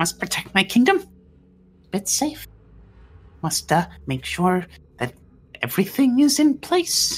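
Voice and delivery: very high, shrill, swooping creature voice, ranting. A game narrator voices an unseen creature in the room: high-pitched creature ranting. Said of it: "ranting in a high pitched voice".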